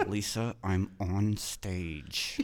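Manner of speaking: very slow, forced through clenched teeth, half-whispered. Retelling a reply to a friend while on stage, through clenched teeth. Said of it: "had my teeth clenched".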